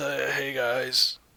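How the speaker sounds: put-on grumbly, grumbling old man voice. Unsure how Johnny Knoxville sounds, trying him anyway: fake Johnny Knoxville impression. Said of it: "not just an old man grumbly voice".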